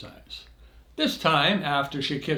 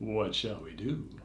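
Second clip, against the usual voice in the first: put-on low, soft, seductive sexy voice; 6 semitones lower, 9 dB quieter than usual. Recounting holding a woman, speaker repeats his question, retelling a sexy voice. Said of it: "in my best sexy voice asked".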